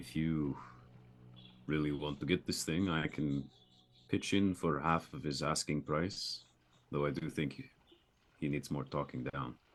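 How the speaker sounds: muttered quietly under breath. Speaking in character to Fob about a price: under his breath. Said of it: "say kind of under his breath".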